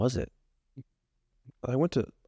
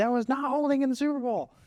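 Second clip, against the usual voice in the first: much higher complaining put-on voice. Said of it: "they're like".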